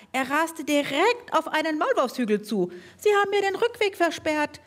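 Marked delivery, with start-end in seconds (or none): 2.9-4.5 very high squeak, growing more and more desperate. A voice at a molehill cries for help as a mower approaches; squeaking desperately. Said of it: "piepste die Stimme mit zunehmender Verzweiflung".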